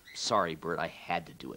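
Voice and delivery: ordinary delivery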